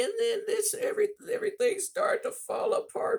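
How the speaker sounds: very high-pitched, upset, emotional woman's voice. Retelling a woman describing a painful situation: imitating an emotional woman. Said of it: "and then she'd get emotional".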